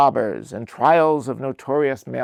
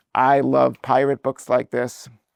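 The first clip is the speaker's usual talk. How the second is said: ordinary talk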